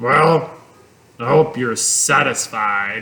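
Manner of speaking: low, scornful, sneering rat voice. Narrator reads the rat's reply to Charlotte in a story; sneering rat voice. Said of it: "sneered the rat".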